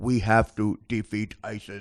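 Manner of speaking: slow, flat, low, level robotic monotone drone. Mocking a politician's pre-taped commercials: robotic Jeb Bush impression. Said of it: "Jeb Bush was even a robot".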